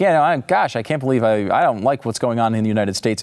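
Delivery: ordinary talk, nothing marked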